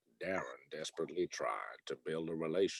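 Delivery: deep, hushed, quiet narrator voice. You just said you can't do him with any volume; do your Morgan Freeman impression. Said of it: "Morgan Freeman. ... I can't do him with any volume".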